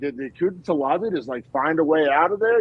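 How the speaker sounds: plain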